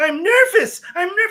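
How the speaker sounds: shrill, very high, loud panicked scream at full volume. Retelling a film scene of an anxiety attack: imitating Leo Bloom screaming. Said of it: "He's screaming at the top of his lungs".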